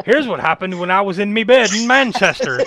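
stage-leprechaun Irish accent. On a podcast, telling a story while going into a full leprechaun accent. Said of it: "I don't know why I went full leprechaun".

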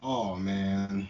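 soft, deflated, disappointed sigh. A podcast host hears of a new coaching hire, sounding disappointed. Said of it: "You sound so disappointed".

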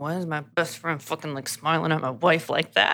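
muttered, grousing, grumbling aside under breath. Retelling a character's words about his wife: imitating Scott grumbling to himself. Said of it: "grumbling to himself".

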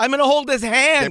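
full-throated, high, frantic scream, very loud. Retelling own words screamed at paramedics: imitating own past screaming. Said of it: "him screaming at the paramedics".

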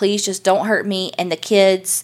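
pleading tone. Retelling a woman's words to a gunman: imitating someone pleading. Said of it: "She's pleading with him".

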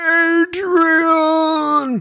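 very high, drawn-out, stretched delivery. Reading listener mail, recalling a movie scene: Rocky voice. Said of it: "that Rocky scene where it's going".

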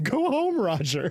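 high, fond, affectionate cartoon voice. Telling Roger to go home, lovingly, in a Snagglepuss voice. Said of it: "say that like fucking Snagglepuss".

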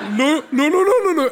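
improvised reindeer noises, high-pitched and loud.

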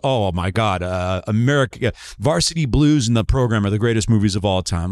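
usual speaking voice

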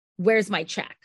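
acted irritated tone. Retelling someone demanding a mailed check: imitating an annoyed demand. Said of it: "He starts getting really annoyed and he's like".

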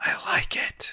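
hushed, put-on drunken whisper. Describing a scene from the show, imitating Russell's drunk whisper. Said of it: "Russell's got that classic drunk whisper".

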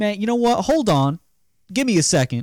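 put-on, very high, hollered yell. Telling how a man came close to him and a friend, retelling a man's yell. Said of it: "he yelled".

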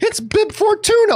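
put-on giddy childlike glee. Retelling own continued excited reaction to another reveal, acting it out. Imitating giddy childlike excitement. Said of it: "jumping up and down on my couch doing this".

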